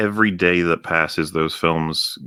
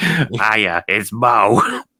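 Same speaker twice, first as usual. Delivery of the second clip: put-on smoker's voice, higher and louder; 4 semitones higher, 4 dB louder than usual. Answering a request for an impression: Moe Szyslak voice. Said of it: "the best I'm gonna be able to pull off".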